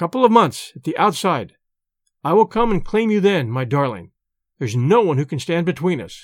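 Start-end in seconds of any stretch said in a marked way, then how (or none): none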